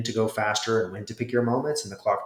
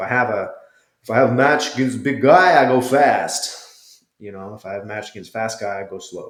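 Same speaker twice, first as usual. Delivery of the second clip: terrible, bad put-on Brazilian accent. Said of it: "terrible Brazilian accent".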